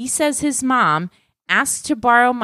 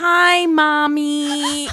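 creepy put-on baby voice, higher; 4 semitones higher than usual. Quoting a voicemail a caller left, the speaker uses a creepy baby voice. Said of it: "leaves a voicemail in a really creepy baby voice".

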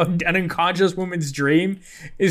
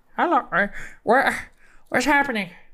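put-on parrot voice; 5 semitones higher than usual. Showing the voices of animal characters, doing Lily Squawk's parrot voice. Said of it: "And Lily Squawk sounds like this".

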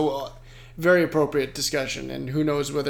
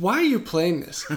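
acted-out exasperated, sharp, irritated outburst; 4 semitones higher than usual. Retelling the moment they snapped at someone playing a cleaning game, retelling snapping at someone. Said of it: "I snapped".

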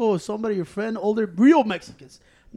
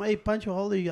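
normal talking voice

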